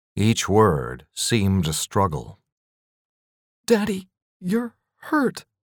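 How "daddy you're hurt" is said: very high-pitched, trembling, quivering voice. A daughter speaks to her father, his face cut by glass, voice quivering. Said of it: "Her voice quivered".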